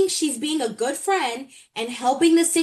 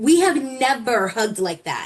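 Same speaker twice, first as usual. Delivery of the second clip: ordinary talk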